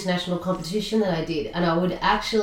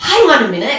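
loud, high, sudden-realization tone. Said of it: "And I'm like".

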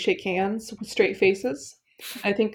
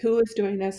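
ordinary talk

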